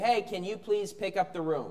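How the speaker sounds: gentle, soft, friendly, nice, polite tone. Asking your kids to pick up the room: nice, polite request. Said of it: "That's a nice way to say something".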